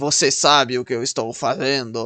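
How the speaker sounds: forced, fake Russian accent, low and slow.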